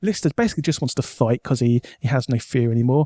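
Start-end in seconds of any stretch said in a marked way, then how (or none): none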